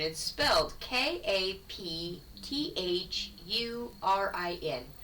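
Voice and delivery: slow spelling out, letter by letter.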